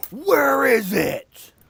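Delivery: huge, shrill dragon bellow, very high, very loud. Narrating an earthquake scene, a voice heard in a bellowing yell. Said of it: "this bellowing voice yelling this".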